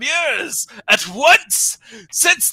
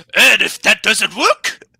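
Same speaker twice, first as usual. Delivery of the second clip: exaggerated Japanese accent; 3 semitones lower, 4 dB louder than usual.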